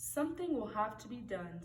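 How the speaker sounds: ordinary delivery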